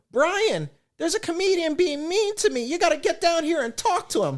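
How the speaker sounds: very high, weepy, crying voice. Comedian retells a front-row woman phoning her boyfriend, imitating a crying woman. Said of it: "She starts crying".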